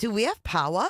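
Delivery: put-on Rhode Island accent. Retelling what a neighbor said when the power came back: imitating a Rhode Island accent. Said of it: "this accent from Rhode Island".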